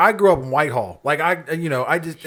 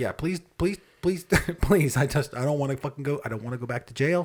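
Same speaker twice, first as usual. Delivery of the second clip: put-on pleading tone, much quieter; 2 semitones lower, 7 dB quieter than usual. Describing how to talk to the officer who pulled you over, imitating pleading. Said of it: "you talk to him like".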